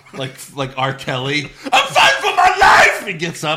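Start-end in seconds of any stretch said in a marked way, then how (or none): 1.4-3.0 frenzied madman scream, very high and loud. Imitating a guest who gets up, screaming like a madman. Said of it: "screaming like a madman".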